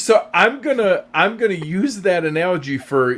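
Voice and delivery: high, loud sarcastic tone. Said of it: "I'm being sarcastic".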